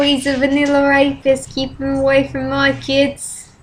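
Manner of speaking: failed English accent drifting into Australian. A speaker who admits being bad at accents attempts an English accent. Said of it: "talk in an English accent".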